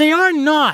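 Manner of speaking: very high, shrill, loud, high-pitched exclamation. Carly objects when the boys say girls can't be pirates, exclaiming. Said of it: "Carly exclaimed".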